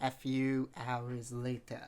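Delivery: very slow narration, words stretched out. Describing an anime dub narrator, doing the SpongeBob narrator voice. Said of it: "he actually does the SpongeBob voice".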